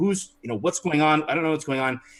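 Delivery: fast, panicked, confused, freaked-out rambling. Voicing a player's character who cannot tell what's going on: freaked out and confused. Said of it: "you're so freaked out".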